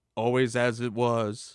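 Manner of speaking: ordinary talk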